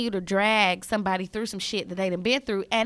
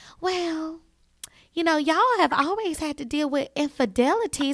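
tiny, small, pitched-up little voice; 6 semitones higher than usual. Act out what Tisha says at their little dinners and meetings, in Tisha's little voice. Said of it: "you know her little voice".

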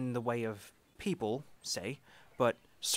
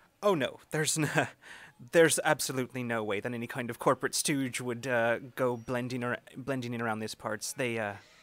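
chuckling, a little louder. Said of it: "Ori just chuckles and he says".

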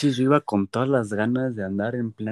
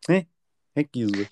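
put-on typical posh preppy fresa girl voice. Retelling how school friends talked: imitating a typical fresa girl. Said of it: "la típica morra fresa".

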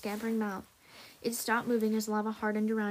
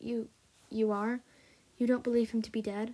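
ordinary delivery

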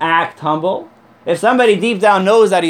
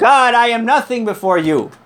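excited, worked-up scream flung out at the peak; 4 semitones higher than usual. Telling a joke, acting out the rabbi at the prayers' climax, retelling a scream. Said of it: "he screams out".

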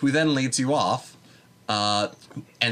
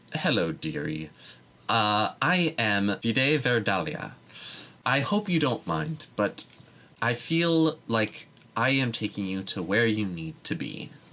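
grandmotherly forest gnome voice. The game master voices the forest gnome grandma greeting Grace as she leads her off, Vide Verdalia voice. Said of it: "ragged woman with graying hair with various green mossy patches to it and an endless number of twigs everywhere walks in, ... the other of which is a forest gnome who is your specific grandma".

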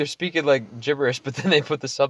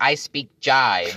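acted elderly woman voice.

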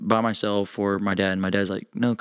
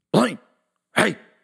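very high, creaky, rough calling out; 11 semitones higher, 4 dB louder than usual. Retelling hearing a voice call out in the dark: imitating dad calling out. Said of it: "distinctively, my dad's voice and everything".

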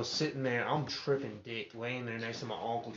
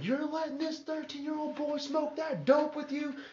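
mock screaming in a much higher pitch. Retelling how a man walked in and screamed at someone, imitating the screaming. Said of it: "starts screaming at Matt".

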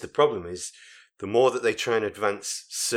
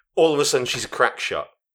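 ordinary talk

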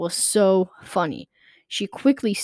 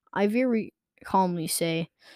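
ordinary delivery

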